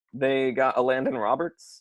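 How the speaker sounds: voice cracking, breaking on a word. Listing players the Dolphins signed in free agency: voice cracking. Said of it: "Oh, my voice cracked".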